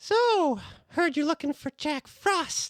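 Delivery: tiny, very high little voice. In a story about finding Jack Frost, a figure pops up: little Gingerbread Man voice. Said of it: "this little voice just pop up".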